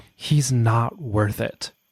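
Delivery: hushed whisper, in character. Voicing a character who calms an ally mid-fight: whispering in character. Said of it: "whisper in her ear".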